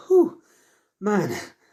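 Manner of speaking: high, winded exhale, out of breath. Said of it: "He's sweating heavily. He's like".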